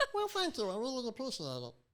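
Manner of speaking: squeaky put-on voice. Thanking someone who praised their character voices, in a squeaky voice. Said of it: "doing a squeaky voice".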